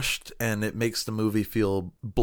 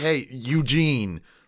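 put-on bold, confident, unfazed tone; 3 semitones higher than usual. Retelling how one movie character confronts another, confidently standing up to someone, imitated. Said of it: "kinda confidently stands up to him".

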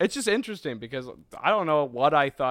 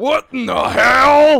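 high, over-the-top pro wrestler yell; 13 semitones higher, 15 dB louder than usual. Mocking a game voice actor's over-the-top Barrett, in a pro-wrestler voice. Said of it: "Sounds like a pro wrestler".

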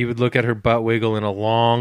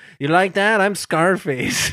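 high-pitched, heavily exaggerated Brazilian accent; 8 semitones higher than usual. Joking on a podcast about doing a Brazilian accent: Scarface-style Brazilian accent. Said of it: "talks like Scarface".

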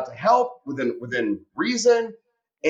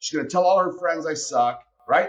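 plain

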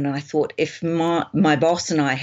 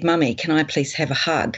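put-on, trembling, pleading child voice. Retelling her seven-year-old son's words outside school, imitating Nicholas's trembling voice. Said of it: "his voice trembling".

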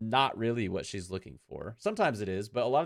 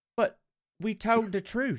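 really bad put-on Australian accent; 12 semitones higher, 3 dB louder than usual. Quoting a woman's line from an episode's end, in a bad australian accent. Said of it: "That was a really bad Australian accent".

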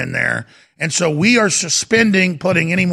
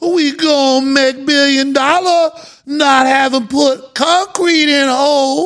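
put-on Cajun accent with raised pitch; 8 semitones higher, 3 dB louder than usual. Retelling what the executive kept saying, imitating a coon-ass accent. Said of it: "he's sitting there going".

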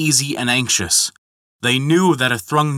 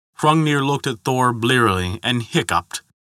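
ordinary delivery, nothing marked

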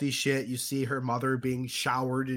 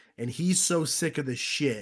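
ordinary talk, nothing marked

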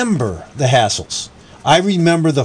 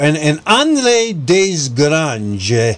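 failed fake French accent, much slower delivery. Reading out a historical name while attempting a French accent, bad Italian-sounding accent. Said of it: "That sounded more Italian".

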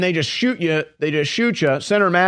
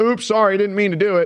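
mock toneless, flat, numb, emotionless; 3 semitones higher than usual. Acting out a shooter apologizing to the victim: imitating a numb, emotionless apology. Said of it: "totally numb".

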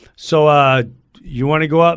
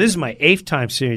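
ordinary talk, nothing marked

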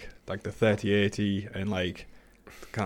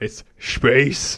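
very loud, breathy shout of space; 4 semitones higher, 8 dB louder than usual. Correcting how Tim Curry said the word: breathy "space" with lots of H's. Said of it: "With lots of H-, H's".

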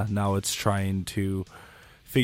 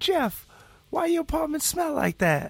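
put-on neighbor-lady voice, very high-pitched. Asked for something Glenda would say in the apartment hallway, imitating Glenda's voice. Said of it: "You should just use that voice".

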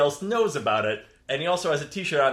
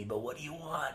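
very quiet, soft-spoken voice; 14 dB quieter than usual. Playing a doorman under a Jedi mind trick, asking what the visitor wants: very quiet voice. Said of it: "I'm being real quiet".

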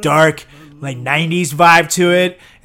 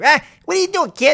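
threatening voice, very high pitch; 11 semitones higher than usual. Imagining Joe Pesci coming after the speaker: Joe Pesci voice. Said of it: "he'll come after me like".

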